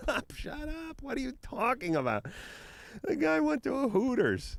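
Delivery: very high, swooping, angry screaming. Recalling listening to the radio: retelling screaming at the radio. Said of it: "I'm just like screaming at the".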